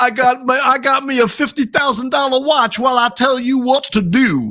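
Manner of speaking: very high, slow, stretched-out Southern drawl, talk-show style. Continuing the joke about a fancy watch: Dr. Phil impression. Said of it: "That was my Doctor Phil impersonation".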